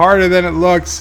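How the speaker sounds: usual speaking voice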